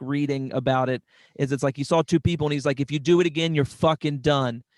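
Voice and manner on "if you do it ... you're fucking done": plain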